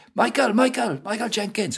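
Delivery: very high, loud calling shout. Recalling chasing an older boy from the school bus, retelling a shout. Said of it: "I shouted".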